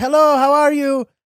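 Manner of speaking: put-on light Eastern European accent, high and loud. Recalling what a former cab driver said, do an Eastern European accent impression. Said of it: "as how I remember him sounding".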